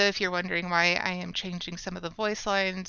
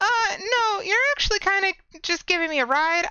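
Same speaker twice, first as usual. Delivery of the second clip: put-on princess voice, much higher, louder; 13 semitones higher, 6 dB louder than usual. Answering someone who asks if he's rescuing her, in a princess character voice. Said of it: "Princess! Yes, the secret's out".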